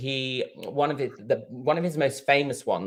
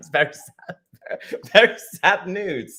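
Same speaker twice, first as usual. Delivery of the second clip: pitched-up voice, giggling through the words; 6 semitones higher, 4 dB louder than usual. Host starting a new segment, laughing at themself while talking. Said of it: "I'm laughing at myself".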